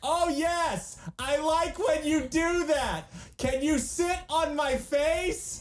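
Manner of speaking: very high, slow, drawn-out yelling.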